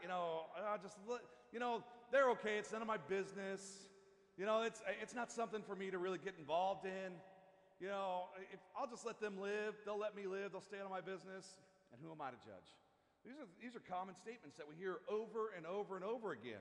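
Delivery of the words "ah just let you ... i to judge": ordinary talk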